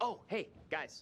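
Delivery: loud, booming, high-pitched voice. Greeting the guys, who then ask why it is so loud: loud greeting. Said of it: "why are you so loud?".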